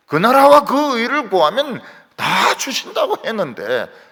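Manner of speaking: high, loud, tearful, crying plea.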